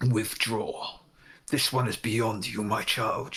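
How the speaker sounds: low, deep, ancient forest-spirit voice. Voicing a shadow creature ordering another figure to withdraw: deep booming voice. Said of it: "A deep voice that booms through the forest itself".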